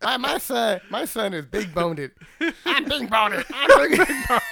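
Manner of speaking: high-pitched, very slow, drawn-out character voice. Explaining where "big boned" came from: Cartman voice. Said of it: "That's the only voice he can do correctly".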